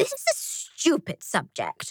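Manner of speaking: grumbling mutter. Tangine mutters while Frankie stands and speaks to everyone. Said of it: "muttered Tangine".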